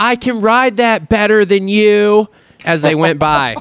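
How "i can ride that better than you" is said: high, drawn-out play-acted yell. A parent recounts their daughter calling to a passing kid, retelling a yell out a window. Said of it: "my daughter literally yelled out the window".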